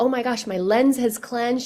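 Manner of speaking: ordinary delivery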